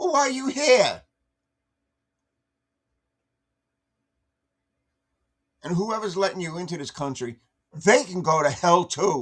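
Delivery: pissed-off, angry ranting outburst. Speaker rants at the person they are addressing, yelling angrily. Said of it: "Sorry, I'm yelling".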